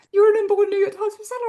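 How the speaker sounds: put-on emotion catching in throat. Recalling being told of a number one bestseller: getting emotional. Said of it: "I'm gonna get emotional just saying it".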